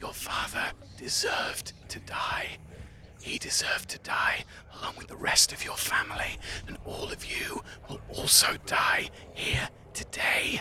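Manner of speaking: creepy, very quiet whisper, barely voiced. Game master voicing a mind shadow whispering inside Titus's head, whispering. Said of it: "whispering things to you like".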